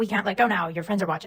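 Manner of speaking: usual speaking voice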